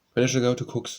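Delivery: plain reading voice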